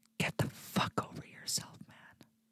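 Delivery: very hushed whisper with held-back exasperation. Ranting about people who want to take their country back, whispered. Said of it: "I have to whisper that".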